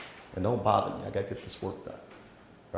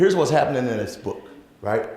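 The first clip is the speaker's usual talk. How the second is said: normal talking voice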